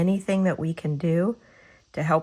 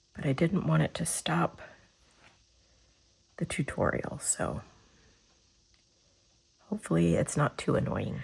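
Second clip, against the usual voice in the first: scratchy, hoarse voice, a bit quieter; 5 dB quieter than usual. During a painting tutorial, explaining they caught a cold, with a scratchy voice from a cold. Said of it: "I'm sorry for the scratchy voice".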